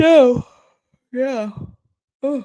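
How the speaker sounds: high-pitched yawn stretching the words. Wrapping up one topic before moving on, speaking while yawning. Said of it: "I'm yawning".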